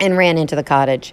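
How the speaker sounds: ordinary delivery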